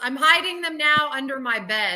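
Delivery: normal talking voice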